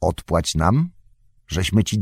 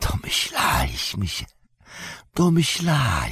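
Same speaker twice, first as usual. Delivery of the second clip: soft, hushed, under-the-breath whispering; 5 dB quieter than usual. Narrator reads a character's reply about the hobbits, whispering. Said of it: "szepnął".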